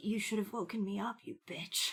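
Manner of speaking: mumbled under the breath. Describing how an actress delivers a line in a scene: muttered under breath. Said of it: "she mutters, like, under her breath".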